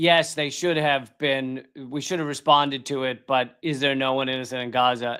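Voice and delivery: ordinary talk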